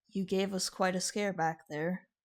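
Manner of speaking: very soft voice. Game master voicing Xerxes to Q, who comes to in his arms, very softly. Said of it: "You just hear Xerxes' voice very softly".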